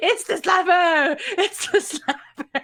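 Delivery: mock sobbing, high, crying, screaming wail. Acting out how the listener screamed while crying: mock crying scream. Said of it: "while you were crying profusely, screaming".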